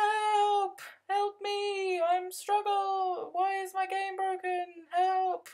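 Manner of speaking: very high, fake, desperate pleading voice. Acting out contacting someone from Sims about a broken game: mock desperate plea for help. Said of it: "That'll be my voice".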